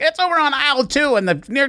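mocking voice, pitched high.

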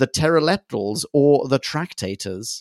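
normal talking voice

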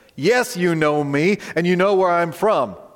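put-on sarcastic tone. Re-quoting a line from the temple courts: sarcastic Jesus line. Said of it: "He's a little sarcastic with them".

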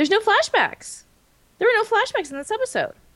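voice suddenly shooting up very high, realizing. Discussing an episode with others, voice getting really high. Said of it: "My voice got really high there".

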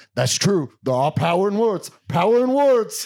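spaced-out, high musing, drifting off. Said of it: "that impression of him".

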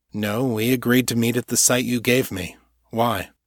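ordinary talk

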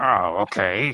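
loud, growled, grumbling, gruff delivery. Imitating Odo, who always growls: growling Odo voice. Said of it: "Odo always just growls".

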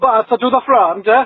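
clumsy fake Italian accent. Trying a put-on accent as a sign-off: bad put-on Italian accent. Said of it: "I'm gonna try to do an accent".

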